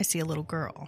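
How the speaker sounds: ordinary delivery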